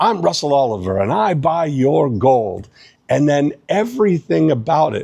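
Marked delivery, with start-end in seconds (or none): 0.0-2.7 put-on South African accent with TV ad pitchman delivery. Show how the gold buyer said these things, in a booming South African Russell Oliver impression. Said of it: "He had this booming voice".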